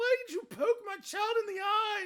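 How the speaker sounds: very high, shrill, very loud sobbing, crying shout. Voicing an upset mother holding her baby: acting out crying. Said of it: "And she's, like, crying".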